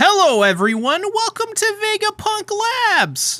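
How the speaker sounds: cracking, very high-pitched voice. Greeting everyone at the start, shortly after waking up, voice cracking. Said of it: "my voice cracked right there".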